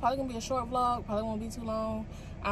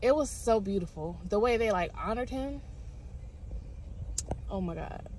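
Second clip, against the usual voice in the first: choked-up, emotional gush, close to tears. Speaker recalling a movie's tribute to its late star, choked up. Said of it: "I'm getting choked up".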